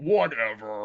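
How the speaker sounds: dismissive, brushing-off knight character voice. Retelling a scene, imitating how the knights sound through the thing. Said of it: "the way the knights sound through the thing".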